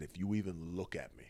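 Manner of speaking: acted whispering. Retelling whispering in a held man's ear: retelling a whisper. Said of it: "I whispered something in his ear".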